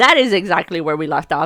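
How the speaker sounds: ordinary delivery, nothing marked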